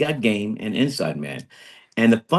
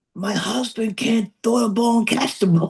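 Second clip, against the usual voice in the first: mock very high screaming, shrieking complaint tone; 12 semitones higher than usual. Retelling what his then wife was screaming: imitating someone screaming. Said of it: "his then wife was screaming".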